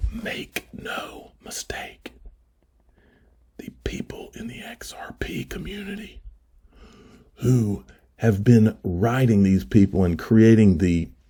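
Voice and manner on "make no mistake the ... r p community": hushed, dramatic whisper for effect. Before playing anything, telling folks one thing for effect: whispered. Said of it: "I'm going to whisper it for effect".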